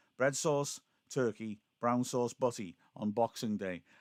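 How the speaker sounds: plain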